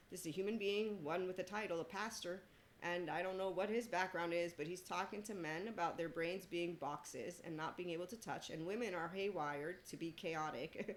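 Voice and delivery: ordinary talk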